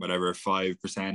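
ordinary delivery

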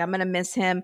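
ordinary talk

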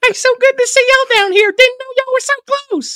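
very high, loud put-on character voice. Riffing with co-hosts, greeting people in a Mr. Hankey voice. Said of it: "it's like Mr. Hanky voice".

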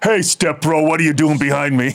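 put-on demon voice. Joking about guys who talk like gym bros: imitating a bro's demon voice. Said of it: "I call it the demon voice".

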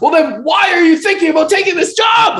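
put-on, very high, loud hollered yell. Retelling a man's question to the speaker, retelling a yell. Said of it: "he's like yelling at me like that".

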